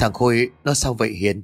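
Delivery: ordinary delivery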